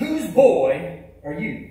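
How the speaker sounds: big, resounding, booming preacher voice. Telling a story, the speaker quotes a young preacher in a big booming preacher voice. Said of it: "with that big booming preacher voice".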